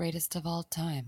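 put-on muttering. Recapping a movie scene, the speaker voices a character: retelling a mutter. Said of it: "Wes Brown mutters".

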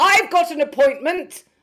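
high-pitched, very loud shouting. Retelling shouting back at a woman with a clipboard who shouted: retelling shouting back. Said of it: "I shouted back".

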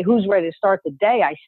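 ordinary talk, nothing marked

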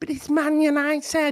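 put-on very high, slow Scouse accent.

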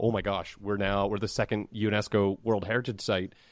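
plain

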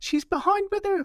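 squeaky, put-on voice. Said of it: "we've gone really high-pitched".

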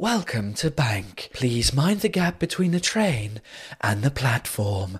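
overly seductive, too-sexy announcer voice. Joking about the London metro announcement voice, imitating a too-sexy tube announcer. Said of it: "elle était beaucoup trop sexy".

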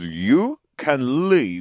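put-on British accent. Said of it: "speaking in a British accent".

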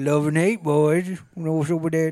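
put-on mumbling Cajun accent. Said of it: "your accent has gotten".

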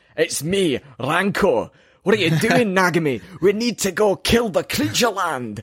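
put-on Scottish accent. Joking about what the music sounds like, voicing Ranko: put-on Scottish accent.

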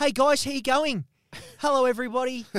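exaggerated voice, very high and loud. Retelling meeting a group of silent men, playing himself as the whitest guy alive. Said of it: "I'm the whitest guy alive going".

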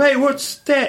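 mild, mock yell. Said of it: "Somebody's gonna yell out to you".

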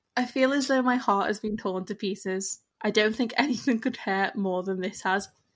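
normal talking voice

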